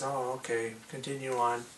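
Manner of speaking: plain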